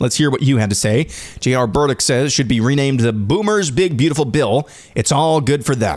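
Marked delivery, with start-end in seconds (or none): none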